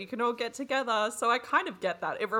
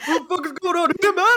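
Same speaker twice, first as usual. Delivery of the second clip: very loud, high, furious acted-out mad outburst; 8 semitones higher, 11 dB louder than usual. Retelling a story and playing Mason's reaction, imitating Mason's mad voice. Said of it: "I love your mad voice".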